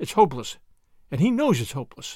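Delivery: ordinary delivery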